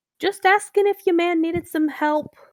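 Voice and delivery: loud put-on New York accent. Narrating a scene where a character bows to Mister Von Mar, speaking in a New York accent. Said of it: "Why am I talking in the New York sa- accent?".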